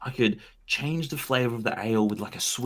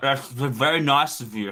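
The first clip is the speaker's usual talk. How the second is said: slow speech pushed through a mouthful of food; 5 dB louder than usual. Replying in character to an offer while eating duck: talking with mouth full. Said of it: "I've got, like, duck in my mouth".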